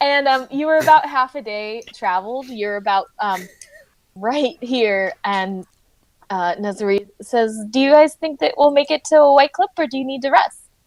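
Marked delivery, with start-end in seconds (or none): 7.7-10.6 high-pitched, quick, rattled-off character voice. Describing the party's travel, the speaker voices an NPC to the players: Nazari character voice. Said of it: "Still working on her character voice".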